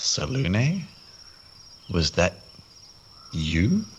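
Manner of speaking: whispered under the breath. In a tabletop game, a player's character whispers under breath to a goddess. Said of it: "I just sort of whisper under my breath".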